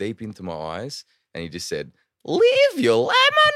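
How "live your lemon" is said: very high, very loud, weird put-on wacky voice. Retelling what a man said to him by the side of the road, really wacky, weird voice. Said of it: "in this like really wacky, weird voice".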